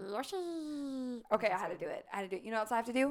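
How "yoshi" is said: high, stretched-out creature cry, pitched up. Doing Mario character impressions, calling out a name: Yoshi voice. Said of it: "we're already doing Mario impressions".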